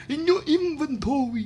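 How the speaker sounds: odd New York vampire accent. Telling players to note items, slipping into a New York vampire voice. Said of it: "what the fuck is that voice?".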